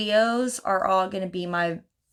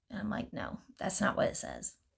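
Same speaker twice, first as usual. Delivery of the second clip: plain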